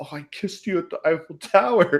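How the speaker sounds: stunned, disbelieving stage whisper. Recounting what a woman whispered to him, retelling a whisper. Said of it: "And she whispered like".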